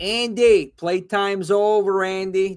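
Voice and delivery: put-on Brooklyn accent in a horror-movie voice. Quoting the killer doll's line while praising its voice actor, Chucky impression, Brooklyn accent. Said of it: "I'm thinking Brooklyn".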